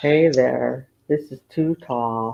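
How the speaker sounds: sultry, low, slow southern drawl. Offering to talk like Too Tall, imitating Too Tall's southern sultry voice. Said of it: "you want me to talk like you, Too Tall?".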